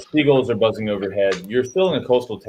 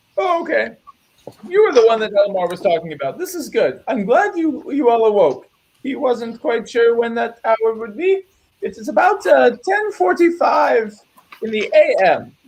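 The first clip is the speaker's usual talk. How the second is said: put-on very high, scatterbrained, dithering old-woman voice; 13 semitones higher than usual. Game master voices an old housekeeper talking to the guests, old housekeeper voice. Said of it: "You see an old woman who must have worked here for a long time, except she doesn't quite know where everything is. / You see an old woman who must have worked here for a long time, / except she's abou".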